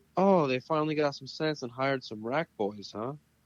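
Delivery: mock, put-on called-out yell, voice lifted high. Retelling how Earl came over while the balls were racked: imitating Earl yelling. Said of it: "he comes over and he's yelling".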